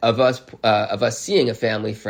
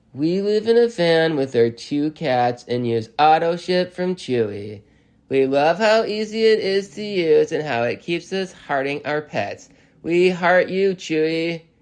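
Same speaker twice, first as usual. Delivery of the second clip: stilted, amateur school-play reading, pitched up; 7 semitones higher than usual. Mocking very amateur actors: stilted amateur-actor delivery. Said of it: "It's the intonation of middle school, of a middle school theater production".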